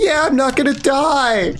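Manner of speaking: very high shout with "die" drawn out. A narrator voices a shout from the back row: Sebastian yelling. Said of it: "you hear Sebastian yell".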